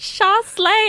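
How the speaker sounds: high, gushing, put-on hype voice.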